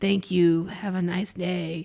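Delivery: low, flat, even monotone robot voice. Discussing the robot voices in a movie, quoting a line in robot voice. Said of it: "did the robot voices himself".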